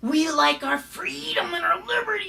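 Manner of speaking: shrill, very high, jarring, every word hit hard. Mocking a politician's speech: imitating Sarah Palin's shrill voice. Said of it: "she's got this shrill, jarring voice".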